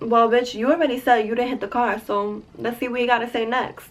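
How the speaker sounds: normal talking voice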